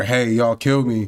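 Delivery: plain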